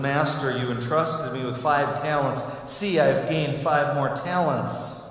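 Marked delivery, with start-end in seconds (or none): none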